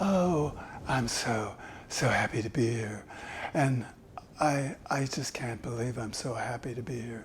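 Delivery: very soft, quiet, breathy and airy voice. Demonstrating the airy voice type, called the Marilyn: airy Marilyn Monroe voice. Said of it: "The first one is airy".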